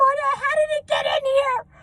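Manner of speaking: mock hysterical sobbing, high-pitched. Retelling finding a dead armadillo in the house, imitating Thea crying hysterically. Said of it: "And she's crying hysterically".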